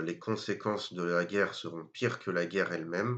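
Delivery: normal talking voice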